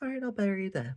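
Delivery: very high, pleasant, sugary, casual nice voice. Recapping a scene, quoting Yamai casually answering a captive: imitating Yamai's nice voice. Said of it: "in her nice voice".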